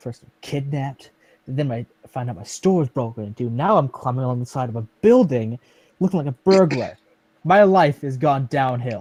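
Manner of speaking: quiet, whispered muttering under the breath. Voicing a character climbing a building, complaining: whispering to himself. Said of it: "whispering to myself".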